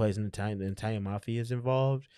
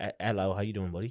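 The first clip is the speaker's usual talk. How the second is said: fake, put-on British accent. Two speakers agree to both do british accents; starting it off: put-on british accent. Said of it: "let's both do our British accents now".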